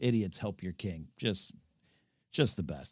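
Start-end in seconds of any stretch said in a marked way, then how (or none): none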